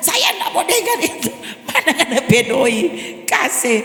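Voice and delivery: high, exasperated, fed-up, losing patience. Retelling a thief demanding money from a grandmother: imitating an exasperated thief. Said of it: "ini maling so semakin gergetan".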